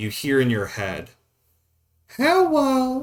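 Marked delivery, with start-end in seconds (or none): 2.2-3.0 put-on odd, very high little child's voice. Voicing a snake-like creature greeting the player: strange childlike voice. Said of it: "in a strange, childlike voice".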